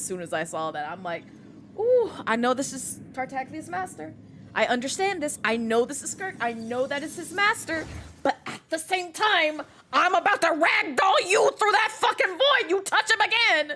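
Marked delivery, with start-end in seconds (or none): 1.8-13.8 acted, mock angry reaction. Retelling first meeting skirk on screen, imitating own angry reaction. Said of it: "I got immediately mad".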